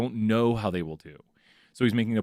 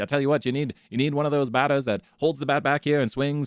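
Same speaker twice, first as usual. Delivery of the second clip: put-on high, old-fashioned, old-time ballplayer voice; 5 semitones higher than usual. Speaker imagines Babe Ruth transported to the future: old-timey Babe Ruth voice. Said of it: "like an old timey voice right here".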